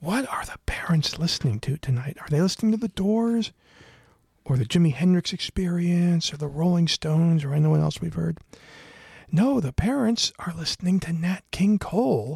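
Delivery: quiet voice. Sneaking downstairs into the parents' tent, lowered voice. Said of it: "Gotta lower my voice".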